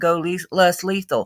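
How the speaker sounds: ordinary delivery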